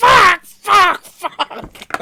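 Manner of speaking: play-acted furious screaming, very high, shrill, very loud. Retelling how Nick reacted to being killed: imitating Nick raging. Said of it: "it got Nick jumping out".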